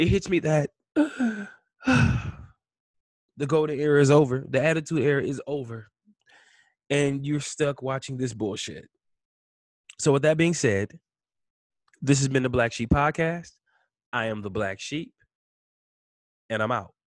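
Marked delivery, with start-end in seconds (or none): 0.0-8.9 tearful crying with voice and words breaking up. Podcast host closing the show to listeners, crying. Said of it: "I'm sorry for crying".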